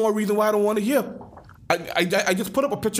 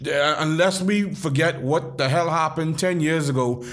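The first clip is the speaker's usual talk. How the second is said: ordinary talk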